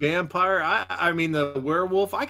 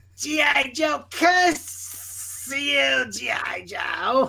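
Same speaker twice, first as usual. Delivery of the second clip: wild, crazy, high, pitched-up cartoon villain voice; 9 semitones higher than usual. Showing the others that crazy voice he has, cursing G.I. Joe in a crazy Cobra Commander voice. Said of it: "that crazy voice that Cobra Commander has".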